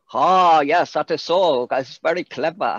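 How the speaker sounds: slow, fake, put-on Chinese accent. Explaining the voices used on a show, doing a fake Chinese accent. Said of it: "And if it's Chinese, it'll be".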